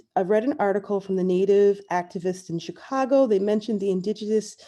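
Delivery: ordinary talk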